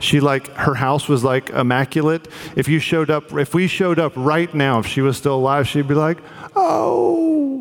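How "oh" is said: put-on raspy sweet old-lady voice, much higher. Imagining how an old lady would greet visitors at her house; raspy sweet old-lady voice. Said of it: "raspy old lady sweet voice".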